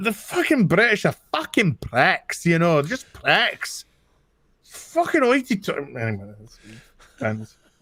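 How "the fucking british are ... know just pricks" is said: put-on Scottish accent, higher. Showing that a Scottish accent is easy: Scottish accent. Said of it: "I'll do a fucking Scottish accent".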